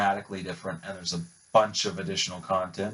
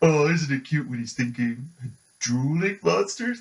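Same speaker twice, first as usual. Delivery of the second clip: dumb, goofy, dopey cartoon voice pitched high; 7 semitones higher, 3 dB louder than usual. Speaker showing off impersonations, doing the stupid Tristan Taylor voice. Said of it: "the stupid voice".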